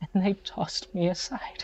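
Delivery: tearful, despairing voice. Voicing a character sitting on the floor in tears: crying in despair. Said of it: "and tears running down his face".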